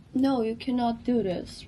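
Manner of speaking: normal talking voice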